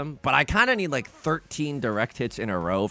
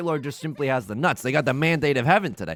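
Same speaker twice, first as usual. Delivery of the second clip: usual speaking voice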